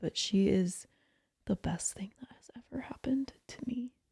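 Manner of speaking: soft, hushed, confessional whisper. Sharing something that feels like betraying friendships, whispering. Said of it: "I have to say this in a whisper".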